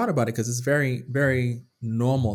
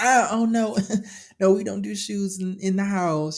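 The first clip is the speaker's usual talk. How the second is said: slow, overbearing, pushy voice; 9 semitones higher than usual. Mocking people who push a no-shoes rule on guests: imitating a pushy, aggressive host. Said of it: "the kind of people that's like".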